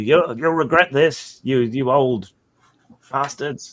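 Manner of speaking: high, angry, yelled shout. Voicing a fleeing villager dragging a friend away: shouting back in anger. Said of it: "shouting back to you".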